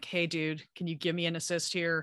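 normal talking voice

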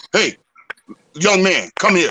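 hard, forceful voice full of authority. Retelling how a man he was scared of called him over, acting out a forceful voice. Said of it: "said in a real forceful voice".

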